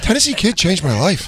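mock high, gushing, starstruck fan voice. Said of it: "He's like".

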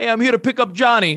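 80s Italian guy voice. Describing the brother's best friend's dad arriving for pickup: imitating an 80s italian guy. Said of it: "80s Italian guy".

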